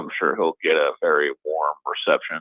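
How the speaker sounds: dry, mock-sincere sarcastic delivery. Predicting how a crowd will greet a former director: sarcastic tone. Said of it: "hear the sarcasm in my voice there".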